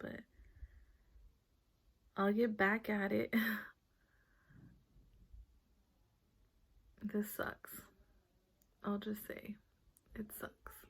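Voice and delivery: crying, tearful voice. Talking to viewers near the end of a video, crying. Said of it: "I can't stop crying".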